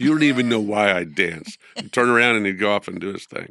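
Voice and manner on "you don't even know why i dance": firm, severe, stern and serious tone. Quoting what a man would say when asked about dancing: mock-stern. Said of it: "he would say it really sternly".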